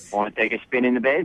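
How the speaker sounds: put-on Australian accent, spoken quickly and rattled off. Asking someone out when told to use the accent: Australian accent. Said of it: "try asking her out in your accent".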